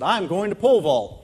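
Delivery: mock proud declaration with voice lifted. Retelling the answer given to the track coach: retelling own proud reply. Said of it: "and I proudly said".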